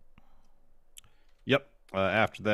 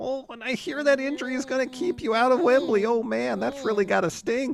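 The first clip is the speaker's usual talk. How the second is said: very high mocking put-on voice. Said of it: "And Yuta says".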